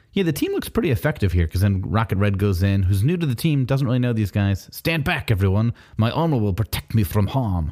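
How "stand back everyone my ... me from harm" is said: bad Russian accent veering into vampire voice. Recapping the comic, the speaker voices the team's new member: Rocket Red, Dracula-ish Russian accent. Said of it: "when Kevin and I do Russian accents, we can only do Dracula voices".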